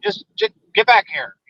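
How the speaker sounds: high voice stuttering and tripping over the words. Retelling a big guy's radio call asking him to come back: imitating stuttering speech. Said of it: "He was stuttering while he was talking".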